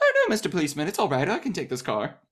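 very high, animated, lilting, swooping sing-song. Retelling a running bit about stealing cars, imitating Katharine Hepburn. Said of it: "she just steals cars and goes like".

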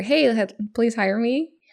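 plain

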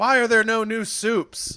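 high, slow mock complaint. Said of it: "he's like".

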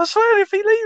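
tiny, very high, loud, squeaky ant voice. Joking about imagined talking ants, the speaker repeats an ant's line in a high-pitched ant voice. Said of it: "high voice".

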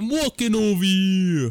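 loud New York Italian accent. Discussing iconic accents, the speaker demonstrates a New York Italian accent. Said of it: "the New York Italian accent's pretty iconic".

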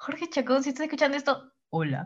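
sensual, sultry, seductive come-on voice. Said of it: "Así lo dijiste".

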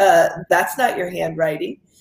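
ordinary talk

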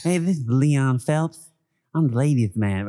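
heavy lisp on every s sound throughout. Describing a call-in show character, the speaker quotes his introduction: Leon Phelps lisp. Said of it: "He has a lisp".

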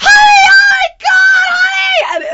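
piercing, very high, shouted scream. Retelling being flung back and trapped in the bushes, calling to Heidi, retelling a scream. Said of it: "And I'm screaming".

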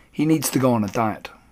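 plain reading voice

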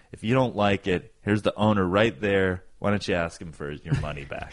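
ordinary talk

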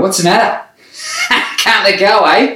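high voice with swooping pitch. Retelling how an uncle joked while shaking hands at christmas: imitating an uncle. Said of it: "and he'd go".

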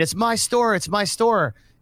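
mock high-pitched, desperate scream. Retelling what a handcuffed man kept shouting: imitating a man screaming. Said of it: "the guy's screaming".

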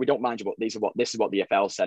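normal talking voice

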